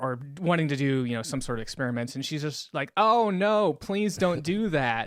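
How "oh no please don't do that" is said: very slow, overacted, hammy damsel voice. Retelling a tied-up woman's plea to an evil scientist: imitating a hammy plea. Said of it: "in a very kinda hammy way".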